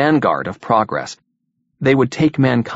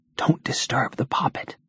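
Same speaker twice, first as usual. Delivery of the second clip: quiet, soft, hushed whisper; 2 semitones higher, 8 dB quieter than usual. Jean, sitting beside Jeff's bed, turns as George comes in: whispered. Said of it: "She turned as he came in and whispered".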